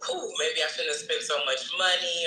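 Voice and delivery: ordinary talk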